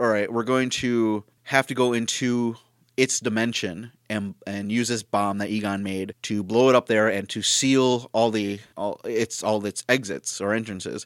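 plain

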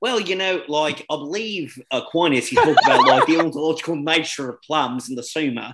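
philosopher-style lecturing, holding-forth delivery. Joking that one of them will go full philosophy: Matt Fradd impression. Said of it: "That was a really good impression".

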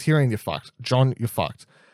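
ordinary delivery

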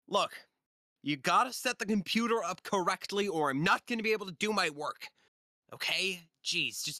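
shrill, high, impatient, bossy yelling. Game master voicing Deirdre yelling at her assistant Balco, with shrill yelling. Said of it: "you can hear the shrill yelling of [name] yelling at [name]".

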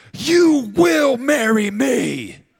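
shrill, slow, drawn-out, full-volume screaming. Acting out proposing to somebody by screaming at them: imitating someone screaming a proposal. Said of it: "propose to somebody by screaming at them".

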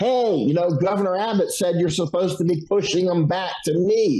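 mild protest, called out. Retelling shouting at the National Guard across the river: retelling own shout. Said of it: "I'm shouting at the National Guard".

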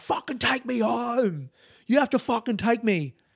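put-on, high-pitched screaming. Retelling hanging onto a cab driver's window, retelling screaming at someone. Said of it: "was like screaming at him".

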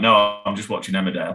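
ordinary delivery

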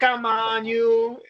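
put-on youthful, young-sounding voice. Retelling an old audition tape to the others: young De Niro voice. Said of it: "And De Niro's, like, young voice".

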